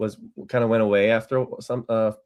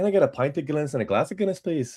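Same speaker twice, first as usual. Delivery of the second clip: put-on Irish brogue, slipping into it; 4 semitones higher than usual. Speaker recalls ordering a drink in Dublin, slipping into a put-on Irish accent. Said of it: "I can't help myself but slip into it".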